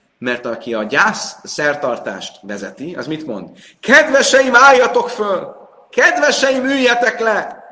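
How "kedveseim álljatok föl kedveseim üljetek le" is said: very loud, very high, booming, theatrical, dramatic call. Quoting what the leader of a funeral ceremony says, theatrical, dramatic calling out. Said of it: "ugye így ilyen nagyon teatrálisan, drám, drámaian kiállt".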